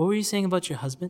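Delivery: calm, soft and quick delivery.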